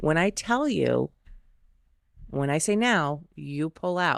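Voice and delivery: acted, perfectly composed, even, very calm delivery. Retelling own past instruction to a partner, imitating own calm voice. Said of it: "very, very calmly, I said".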